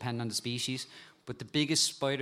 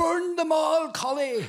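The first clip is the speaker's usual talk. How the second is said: very high, drawn-out Glasgow scream at the top of the lungs; 8 dB louder than usual. Quoting a guy from Glasgow who rang in pain, retelling a Scottish guy screaming. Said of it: "he just started screaming on the phone".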